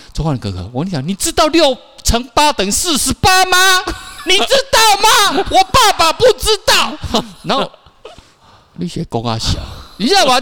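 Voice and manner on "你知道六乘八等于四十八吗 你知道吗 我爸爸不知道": very high, boastful, cocky schoolkid voice. Retelling a third-grader's boast about multiplication: imitating a confident schoolkid. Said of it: "用那种非常自信的眼光看".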